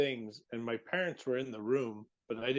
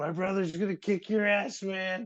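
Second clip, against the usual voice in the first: mock hard yelling, loud and high-pitched; 9 semitones higher, 5 dB louder than usual. Retelling yelling at hospital staff cutting clothes off: imitating own past yelling. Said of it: "I was yelling at him".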